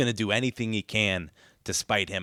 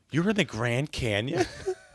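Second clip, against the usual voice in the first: hurt, truly upset, stung voice; 4 semitones higher than usual. Describing a movie scene with two Spider-Men, imitating Tobey Maguire being upset. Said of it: "Like he's so upset".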